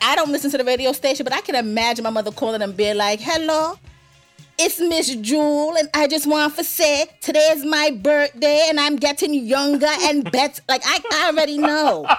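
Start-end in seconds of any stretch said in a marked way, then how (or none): 3.2-10.6 put-on Antiguan accent. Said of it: "You out here winning with the Antiguan accent".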